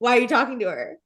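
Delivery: mock angry tone. Retelling a cast member confronting another: imitating Katie getting mad. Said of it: "Katie saw Scheana talking to Lala at sir and went".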